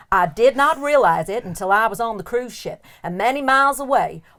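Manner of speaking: slightly bad American accent drifting southern.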